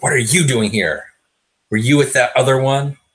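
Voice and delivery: hostile hissing in a high voice. Narrator voicing a woman who turns to the player at the door, hissing. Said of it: "kind of glares at you and hisses".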